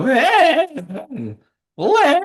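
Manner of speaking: very high, squeaky, breaking, cracking voice. Retelling own line in a match: imitating a puberty voice crack. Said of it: "a full-on stereotypical puberty voice crack".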